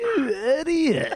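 very high, laughing put-down. Telling a story, the speaker acts out a man laughing at him: retelling a laughing insult. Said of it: "he laughed at me and goes".

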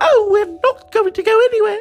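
very high, timid chambermaid voice.

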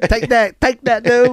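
put-on thick Vietnamese accent, pitched high. Imitating a trash-talking next door neighbor: imitating a Vietnamese neighbor's thick accent. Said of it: "When I do the Vietnamese accent".

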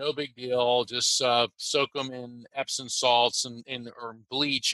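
ordinary talk, nothing marked

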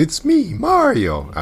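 pitch way up, cartoony, rough, clumsy voice. Talking about the voice casting for the Mario movie, Mario voice impression. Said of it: "where we got that iconic Mario voice".

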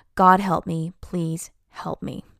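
plain

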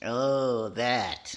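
very low, deadpan, flat, no enthusiasm. Reacting to the anniversary of a movie they starred in, not very excited. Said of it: "You don't sound very excited".

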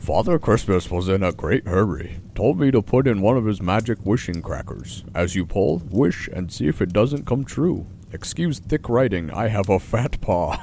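put-on polar bear character voice. Speaker reads out a postscript to a letter: polar bear voice. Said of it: "I gotta do my best polar bear voice".

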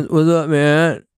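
put-on, high-pitched, drawled stoner accent. Describing getting stuck in a mode, the speaker demonstrates a stoner accent. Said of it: "stoner accent".

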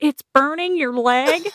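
loud, high, shrill scream. Speaker recounts what she yelled in front of everyone, retelling a scream. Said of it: "she screamed out loud".

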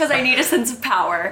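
laughing through the words.

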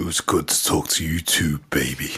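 breathy, near-whispered delivery. Signing off with a fellow speaker after catching up, in a Duke Nukem voice. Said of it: "your Duke Nukem voice".

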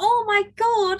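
play-acted very high squeal of delight. Recalling receiving an acceptance email, retelling a joyful scream. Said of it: "I am screaming".

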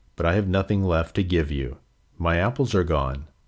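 plain

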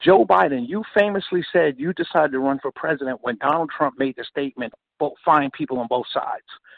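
ordinary talk, nothing marked

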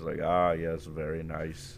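imitated Indian accent. Retelling buying a phone, doing the voice in a put-on Indian accent. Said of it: "I cannot stop doing that voice".

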